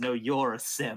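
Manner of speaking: really gravelly, ancient, unused-sounding rasp. Game master voicing a figure who looks up at a player: really gravelly voice. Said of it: "in this really gravelly voice that sounds like he hasn't spoken in a century".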